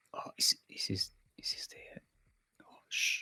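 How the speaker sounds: sudden, very quiet, shushing whisper. Commentating a match as the Zerglings come in: whispering. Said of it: "I don't know why I'm whispering".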